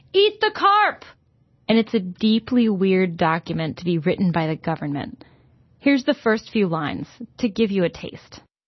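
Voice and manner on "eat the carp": very high, loud, emphatic all-caps shout. Reading a government flyer title the way it is written: read as all-caps exclamation. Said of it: "written in all caps and has an exclamation point".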